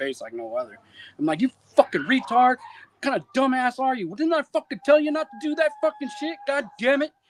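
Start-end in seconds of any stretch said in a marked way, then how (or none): 1.4-7.1 raging, furious tirade, pitched very high. Retelling flipping out on a soldier: retelling a furious rant. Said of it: "I flip the fuck out on Bates".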